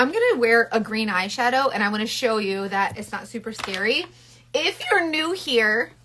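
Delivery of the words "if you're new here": high voice cracking into a squeak. A makeup vlogger greets new viewers, voice squeaking. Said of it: "did my voice just squeak like a thirteen year old boy".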